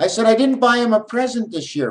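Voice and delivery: loud, very high-pitched. Asked to speak up, the speaker repeats the line louder. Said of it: "you want me to talk louder?".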